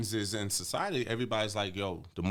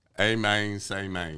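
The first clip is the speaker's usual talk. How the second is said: Memphis-accented speech; 4 dB louder than usual. Repeating a Memphis phrase after being told to, Memphis accent. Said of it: "You sound real Memphis".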